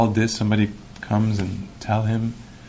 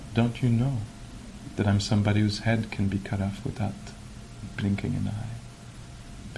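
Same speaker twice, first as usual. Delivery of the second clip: soft, very quiet voice, much quieter; 7 dB quieter than usual. Telling a story, quoting the monk's answer to the warrior, retelling the monk's quiet reply. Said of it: "the monk just answers very quietly".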